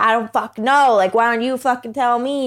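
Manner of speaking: put-on yelling. Retelling a texted exchange with him: imitating someone yelling. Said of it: "it was just him yelling at me".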